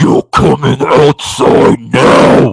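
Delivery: forceful, projected, loud stage whisper. Retelling what she said to the speaker: Linda Blair whisper. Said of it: "did the Linda Blair thing, like, in a whisper".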